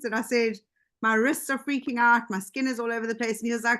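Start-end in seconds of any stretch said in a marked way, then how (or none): none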